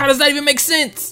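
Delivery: very high-pitched, shrill, loud yelling outburst. Speaking to listeners, before apologizing for it: yelling. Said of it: "sorry for yelling".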